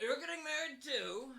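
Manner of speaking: put-on very high, very loud tipsy, drunken outburst. Retelling what a man said in a drunken stupor, imitating him drunk. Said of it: "in his drunken stupor he's like".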